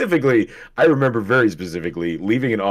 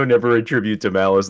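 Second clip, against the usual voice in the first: plain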